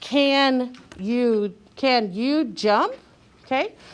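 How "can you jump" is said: questioning rise in pitch at end of jump. Teaching how to ask a question, rising at the end on jump. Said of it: "my voice needs to go up at the end. So it goes like this".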